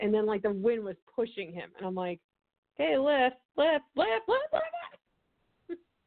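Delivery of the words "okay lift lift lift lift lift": mock very slow, drawn-out repeated yells, rising in pitch. Retelling yelling at a driver in the car: imitating own yelling. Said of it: "I'm, like, yelling at him".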